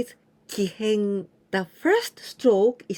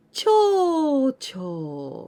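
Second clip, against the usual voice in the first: cho cho said with the pitch going down; 5 semitones higher than usual. Explaining kanji readings, contrasting intonation: falling pitch on cho. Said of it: "the intonation is not the same. It's, you know, cho cho going down".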